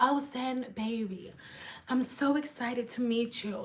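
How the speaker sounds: sultry, sensual voice. Retelling a client's greeting: imitating a sensual client. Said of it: "she was really sensual".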